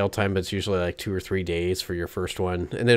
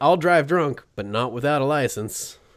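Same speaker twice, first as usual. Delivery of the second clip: put-on American Southern accent; 6 semitones higher than usual. Acting out what a drunk driver might say: put-on Southern accent. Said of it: "automatically go to, like, Southern accents".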